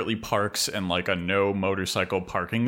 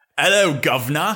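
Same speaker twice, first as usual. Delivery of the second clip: mock, put-on British accent; 8 semitones higher, 8 dB louder than usual. Asked to use a british accent all episode: put-on british accent. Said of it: "using that honestly flawless British accent".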